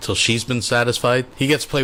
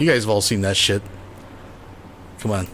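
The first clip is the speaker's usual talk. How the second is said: plain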